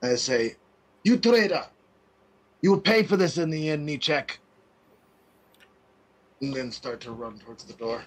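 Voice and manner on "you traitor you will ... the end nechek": loud, high, furious shouted yell. A player voicing their character, yelling out over their shoulder while carrying someone. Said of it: "I yell out over my shoulder".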